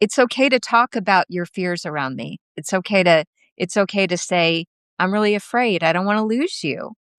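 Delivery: normal talking voice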